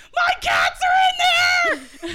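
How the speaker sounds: shrill, booming, high, frantic scream, very slow and drawn out. Speaker retelling running up to the cops outside the house, retelling a scream. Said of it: "I run up to the cops screaming".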